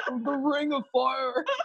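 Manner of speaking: slow ancient-sounding demonic voice. Retelling giving birth, recreating her own words in a man's demonic voice. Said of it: "I literally had like a man's demonic voice".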